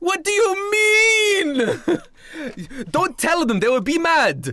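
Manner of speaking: very high, shrill yell, word "mean" stretched. A player retells a game scene, voicing the character: imitating Leonardo da Vinci yelling. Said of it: "da Vinci's voice yelling".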